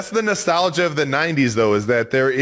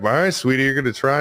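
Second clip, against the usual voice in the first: uninterested, indifferent, couldn't-care-less, going through motions. Imitating the movie dad who is not trying to find Kevin: imitating a disinterested dad. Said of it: "was very disinterested in finding Kevin".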